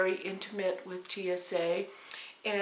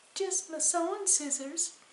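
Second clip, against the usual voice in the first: mock very high, syrupy, sugar-sweet voice; 10 semitones higher than usual. Retelling the speaker's own answer to a man's question: putting on a sweet voice. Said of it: "in that sweet voice".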